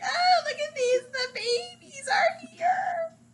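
play-acted very high, doting, nostalgic gushing. Retelling own reaction to watching old interviews: retelling own nostalgic gushing. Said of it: "But I was so nostalgic".

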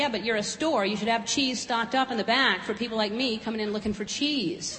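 ordinary delivery

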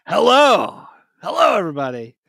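over-forceful, aggressive, punchy delivery. Teasing a co-host about their greeting, mimicking an aggressive hello. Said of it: "that hello was aggressive".

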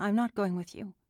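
forced steady voice. Narrating, a student refuses to leave with someone, keeping her voice steady. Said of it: "Andy worked hard to keep her voice steady".

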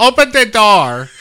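very loud, high, unconvincing fake Polish accent. Acting out a woman knocking on the window, in a bad Polish accent. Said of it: "I don't think that's Polish at all".

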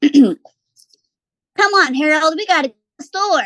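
high, squeaky little squirrel voice. Auditioning a line as a squirrel talking to a rhino: squirrel voice. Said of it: "Squirrel voice. Is that squirrel enough?".

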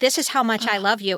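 imitated tearful voice. Retelling how a director spoke while crying: imitating Michael Landon crying. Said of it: "And he would be crying, like".

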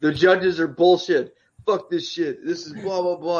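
put-on angry rant, screaming. Retelling how a fighter reacted to losing the decision: imitating Sam Alvey screaming. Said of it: "started screaming".

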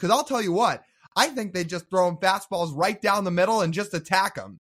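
dry, tongue-in-cheek sarcasm, obviously not meant. Speaker quotes someone else's words about pitching to a batter, retelling a sarcastic remark. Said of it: "as his sarcastic way of saying".

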